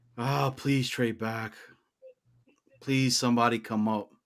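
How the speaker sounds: anxious and on edge. Talking through the draft with co-hosts, sounding nervous. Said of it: "you sound nervous".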